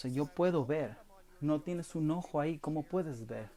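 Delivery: ordinary delivery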